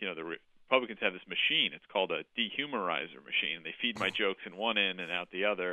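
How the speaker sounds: ordinary delivery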